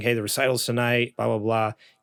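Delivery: ordinary talk, nothing marked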